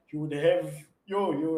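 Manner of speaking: usual speaking voice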